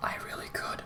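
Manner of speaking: soft whispered aside.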